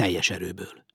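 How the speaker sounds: plain reading voice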